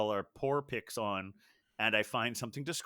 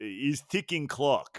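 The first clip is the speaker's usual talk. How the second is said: put-on, cartoonish Russian accent; 3 semitones higher than usual. Quoting a cartoon pair presenting a ticking bomb as a gift, Russian accent. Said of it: "You have to say it with a Russian accent".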